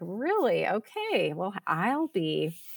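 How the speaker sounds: mock very slow, swooping, laughing through the words. Retelling a mother's reaction to a quilting plan: imitating a mom laughing while talking. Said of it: "my mom just laughing".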